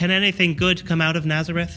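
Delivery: ordinary talk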